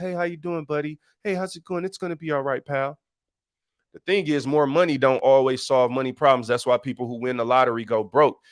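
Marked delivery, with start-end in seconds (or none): 0.0-3.0 soft, friendly, nice put-on professional voice. Showing the nice voice used at work to be nice to people, in a nice work voice. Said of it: "talking my work voice".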